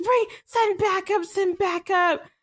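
mock high-pitched screaming. Retelling a driver screaming for backup over the line: imitating someone screaming. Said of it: "he's screaming on the, on the line".

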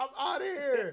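mock panic, loud, high-pitched and slow.

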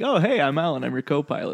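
mock easygoing, friendly, breezy voice. Retelling how co-pilot alan greets the crew: imitating a friendly co-pilot. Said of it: "he's just so friendly".

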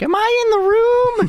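put-on very slow, very high, drawn-out yell. Retelling a Dungeons and Dragons player yelling from the kitchen, imitating the yell. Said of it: "he's just yelling from the kitchen like".

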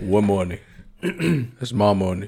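fake low voice. Repeating the other speaker's government line: Debo voice repeated. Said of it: "Debo on the block".

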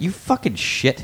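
furious, angry outburst. Retelling a father's reaction to a paycheck: imitating someone angry. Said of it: "he got mad at me".

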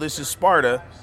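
ordinary delivery

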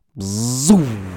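drawn-out whooshing zoom like something speeding past. Describing October going by fast: impression of October zipping by. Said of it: "That's my impression of October just zipping by".

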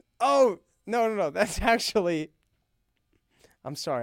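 slow speech, laughing at himself mid-sentence. Catching own mistake mid-discussion, laughing. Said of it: "I'm laughing at how dumb I am".

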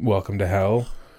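plain

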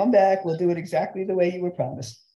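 ordinary delivery

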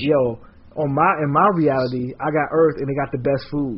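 ordinary delivery

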